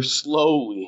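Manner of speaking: strong stress on the word slowly. Podcast host asking listeners for reviews, stressing the word slowly. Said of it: "and I stress the word slowly".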